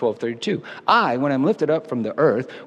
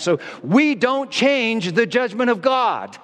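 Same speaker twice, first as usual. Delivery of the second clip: raised, very high, shrill shouting; 9 semitones higher than usual. Speaker addressing listeners, wanting them to hear: yelling. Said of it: "Sorry for yelling".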